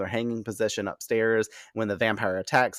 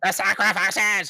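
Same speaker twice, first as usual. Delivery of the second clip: put-on villain scream, higher and louder; 10 semitones higher, 5 dB louder than usual. Recapping an episode, imitating Absalom screaming at the vampires. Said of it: "I gotta imitate it".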